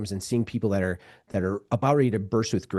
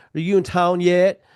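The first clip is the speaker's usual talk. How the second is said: put-on high, loud Southern twang; 8 semitones higher, 6 dB louder than usual. Retelling a text message from a friend: imitating a Southern accent. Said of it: "her Southern accent actually came through".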